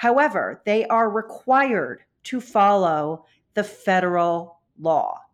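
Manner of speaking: slow, measured, deliberate word-by-word delivery. Explaining charter schools to Julie, the speaker says: slow and deliberate. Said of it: "I'm saying that slowly and deliberately".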